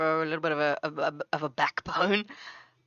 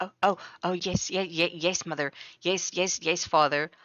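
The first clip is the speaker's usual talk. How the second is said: mock stammering, stuttering voice. Imitating a player character answering his parents: imitating a stuttering character. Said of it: "you just see him stuttering and he's just like".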